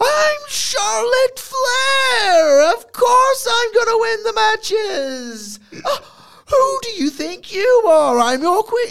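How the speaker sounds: shrill, loud, obnoxious cadence. Imitating how a wrestler talks, mocking her cadence: Charlotte Flair impression. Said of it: "that's how she talks".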